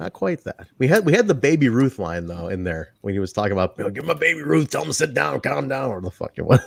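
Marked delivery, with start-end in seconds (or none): 3.9-5.9 deliberately rough, creaky, badly done put-on voice. Retelling a soundbite from the show: bad Sammy impression. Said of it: "doing a bad Sammy impression".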